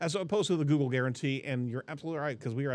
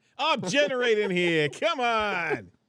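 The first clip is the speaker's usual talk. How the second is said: mock New York accent, higher and louder; 8 semitones higher, 7 dB louder than usual. Joining the ai joke: put-on new york accent. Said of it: "we're actually mimicking something".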